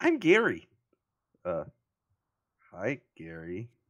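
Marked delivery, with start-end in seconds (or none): 0.0-0.7 very high, shrill, very loud goblin voice yell. Voicing a goblin who shouts his name: goblin Gary shouting. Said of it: "The goblin shouts".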